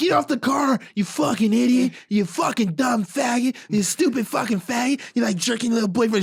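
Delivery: mock wild, crazed, high, unhinged ranting tirade. Retelling a movie scene where a character rants at a man: imitating someone ranting crazily. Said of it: "She just starts talking to him crazy".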